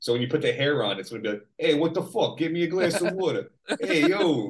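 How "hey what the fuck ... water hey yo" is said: Long Island accent. Saying whoever wears the speaker's donated hair will talk like this: Long Island accent. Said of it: "you've got to take my Long Island accent".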